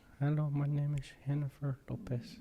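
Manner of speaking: put-on high, slow, drawn-out Mexican accent. Doing a quick impression with a Mexican accent. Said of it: "that wasn't a terrible, uh, Mexican accent".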